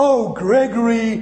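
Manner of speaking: high, anguished voice. Showing how people say his name, mock-anguished 'oh, Gregory'. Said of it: "I know that's anguish".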